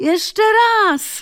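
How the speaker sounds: very high-pitched, loud calling out. Charmaine calls out as she steps back to the service line. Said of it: "zawołała Charmaine".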